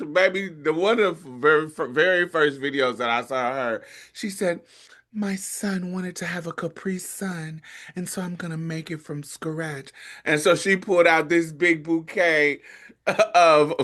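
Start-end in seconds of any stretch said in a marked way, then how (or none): 5.1-9.9 very quiet, soft, sweet voice, barely above a hush. Quoting a content creator's first video: soft sweet Nara Smith voice. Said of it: "sweet, sweet pray love voice where it's, it's all soft".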